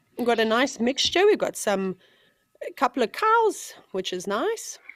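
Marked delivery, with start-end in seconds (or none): 1.3-4.8 unexpectedly very high-pitched voice. Describing animals at a waterhole, voice going high-pitched. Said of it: "my voice went so high pitched there".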